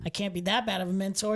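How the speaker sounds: ordinary delivery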